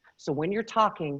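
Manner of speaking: ordinary talk, nothing marked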